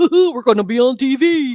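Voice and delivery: goofy, hooting playful tease. Retelling how a husband teases with the old line: Goofy voice. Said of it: "if I'm excited about something, then he'll go".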